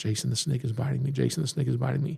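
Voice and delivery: breathy, soft half-whisper, voice dropping away. Retelling how the mother leaned in during a show: imitating a half-whisper. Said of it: "and whispers to me".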